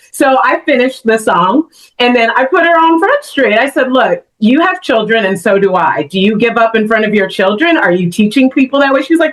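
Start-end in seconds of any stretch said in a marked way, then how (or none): none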